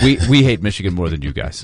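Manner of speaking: mock-deadpan delivery. Joining a co-host in imitating a focused player's reply, mimicking a deadpan reply. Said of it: "it's deadpan".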